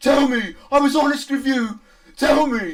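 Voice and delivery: acted, mock-demanding tone. Recounting how a character demands answers from you, mock-demanding. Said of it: "He demands of you".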